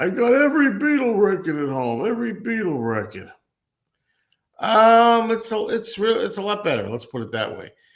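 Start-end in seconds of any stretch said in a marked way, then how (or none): 0.0-3.3 loud, high-pitched know-it-all tone. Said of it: "that guy when he says".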